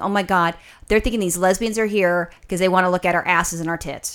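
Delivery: ordinary talk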